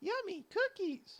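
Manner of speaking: goofy, silly cartoon voice, very high-pitched. Reading a fan story aloud, doing a character's line in silly voice. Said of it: "I'll do the silly voices".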